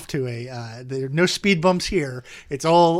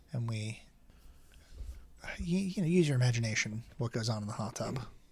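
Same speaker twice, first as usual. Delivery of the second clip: hushed, very quiet half-whisper; 3 semitones lower, 11 dB quieter than usual. Talking with a co-host about bonus episodes: half-whispering. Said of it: "if you're gonna whisper like that".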